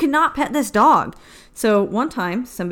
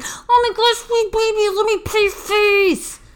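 put-on maniac screaming, very high and drawn out; 11 semitones higher than usual. Mocking someone two inches from a service dog: imitating screaming like a maniac. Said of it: "screaming like a maniac".

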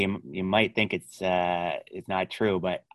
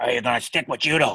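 put-on stern, growling voice; 5 semitones higher than usual. Retelling a talk about trying judo, the speaker imitates Bill's stern growl. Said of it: "he growls when he talks".

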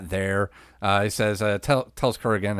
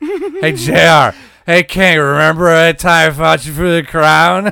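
put-on drunk voice, higher and louder; 8 semitones higher, 12 dB louder than usual. Retelling commentary from a drunk Hawk: imitating drunk Hawk. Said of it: "Hawk's on commentary, shit-faced".

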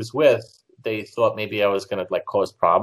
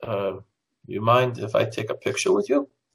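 put-on broken German accent. Retelling the fan asking for a photo: imitating a broken german accent. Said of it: "with a broken, you know, broken, uh, German".

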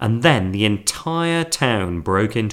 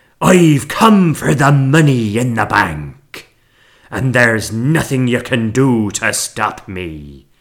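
slow, loud, drawn-out bellowing roar; 6 dB louder than usual. Reading a story, Scragbeard confronts the people hiding outside the saloon: roaring. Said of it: "roared Scragbeard".

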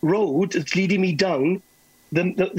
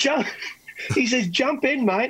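put-on slight Australian accent, slower; 6 semitones higher than usual. Retelling what a dancer told him, the speaker uses a slight Australian accent. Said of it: "He talks in a kind of a little bit of an Australian accent".

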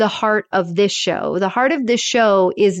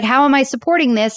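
mock irritated, annoyed, fed-up, put-upon tone; 4 semitones higher than usual. Retelling a woman holding up a product that failed, mock-annoyed. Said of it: "she's all annoyed because she's like".

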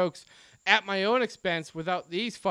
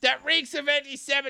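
put-on Yiddish-inflected accent on the whole line; 7 semitones higher than usual.

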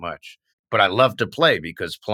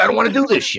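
put-on yelling, higher and louder; 13 semitones higher, 6 dB louder than usual. Retelling yelling at a teacher in string quartet class: imitating himself yelling. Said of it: "I just started yelling at the teacher".

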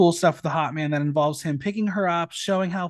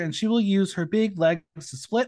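ordinary delivery

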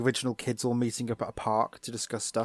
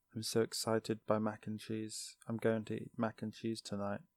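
mock dead, flat, emotionless monotone; 11 dB quieter than usual. Quoting how Cody talks about mac and cheese, in a flat Cody voice. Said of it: "as Cody would put it ... He just has no emotion in his voice at all".

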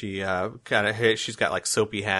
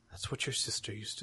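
very quiet voice, getting quieter; 13 dB quieter than usual. Voicing a worried mother in a scene, speaking very quietly. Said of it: "she gets very quiet".

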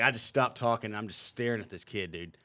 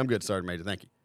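plain

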